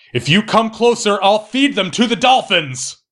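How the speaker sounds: high, shouted, yelling voice. Speaker recapping a movie scene where Woman X is cornered, retelling her shouted threat. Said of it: "as she shouts".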